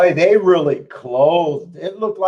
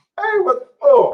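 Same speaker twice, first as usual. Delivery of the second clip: cracking voice, higher; 10 semitones higher than usual. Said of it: "my voice is cracking".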